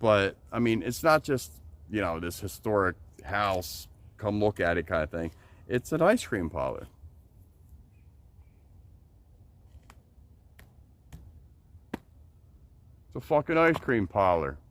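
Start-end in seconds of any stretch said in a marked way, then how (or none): 5.7-14.5 a little aggressive, worked-up, swooping outburst. Speaker describing a place they used to go, a little aggressive. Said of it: "my voice kind of sounded a little aggressive".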